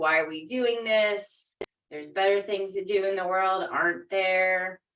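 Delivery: ordinary delivery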